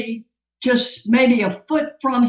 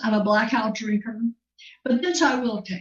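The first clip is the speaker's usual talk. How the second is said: normal talking voice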